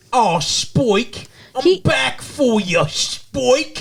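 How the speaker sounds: slow, high bad British accent. Imitating Drusilla calling to Spike: Drusilla's bad British accent. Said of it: "the worst fucking accent".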